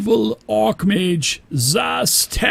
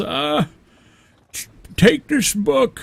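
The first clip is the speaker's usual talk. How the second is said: put-on drawn-out old mage voice; 4 semitones higher than usual. Voicing the old mage speaking to adventurers: Delphin voice. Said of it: "and he says".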